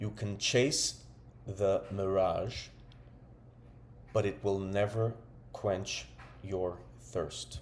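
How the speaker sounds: very slow, unhurried, every word given time. Sharing a quote they love, spoken very slowly. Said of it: "I'm going to say this very slowly".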